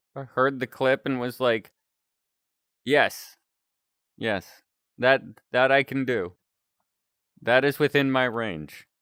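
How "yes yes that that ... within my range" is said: normal talking voice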